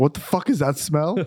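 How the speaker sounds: acted-out fed-up, angry, indignant tone. Retelling what Vic says on coming into a room: imitating Vic getting mad. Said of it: "And he gets so mad".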